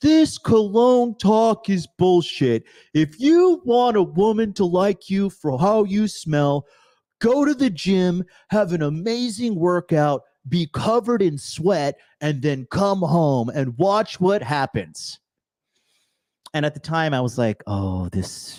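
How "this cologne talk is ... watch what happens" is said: worked-up, high-pitched, ranting screaming. Retelling a man who unmuted his mic during a cologne talk; imitating a man screaming. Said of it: "started screaming at the top of his lungs".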